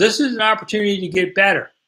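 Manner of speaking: mock coach yelling, calling out. Retelling what a coach yelled at practice: retelling a coach yelling. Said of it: "he yells".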